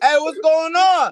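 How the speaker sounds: very high, hollered, flirty shout. Imagining having to shout when approaching someone on a date: pretend shouting a pickup line. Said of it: "you had to shout?".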